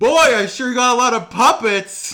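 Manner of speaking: belted high and loud. Doing impressions for the audience: Jeff Dunham impression. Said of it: "It's Jeff Dunham".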